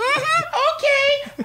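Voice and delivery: grating, irritating, very high-pitched voice. Retelling what a job expo attendee said: imitating an irritating voice. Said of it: "That's his exact fucking voice".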